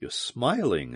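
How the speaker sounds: low, hushed, puzzled whisper. Commander Jansky speaks to the man who called her Valduma; low, puzzled whisper. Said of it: "she whispered".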